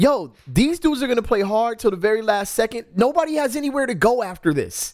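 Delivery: shrill, very high-pitched, frustrated scream. Recounting watching teams fail to close out games, retelling screaming at the TV. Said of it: "I'm screaming at the TV like".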